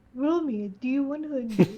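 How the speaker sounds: very drawn-out, slow, douchebaggy tone. Imitating another player who asked for a d100 roll: Cameron impression with a douchey note. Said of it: "That was the best Cameron impression".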